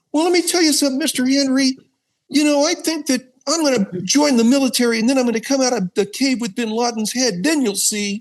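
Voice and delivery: very high, squeaky cartoon voice. Doing an early character's voice, addressing Mister Henry: Rocky the Squirrel voice. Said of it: "he had he like almost a Rocky the Squirrel voice".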